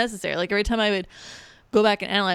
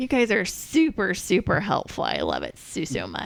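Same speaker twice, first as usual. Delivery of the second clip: sarcastic, ironic gushing, drawn-out and sing-song. Speaker thanks the group for helping with a decision, sarcastic. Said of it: "Sounds like sarcasm".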